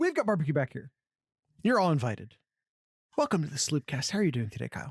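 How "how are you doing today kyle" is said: whispered, lower voice. Welcoming listeners, then asking another speaker how he is doing: whispering. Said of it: "I don't know why I whispered that".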